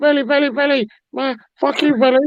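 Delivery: squeaky, very high-pitched yelling. Acting out someone shouting before being run over: imitating a high-pitched shout. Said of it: "shouting, ... In your high-pitched voice".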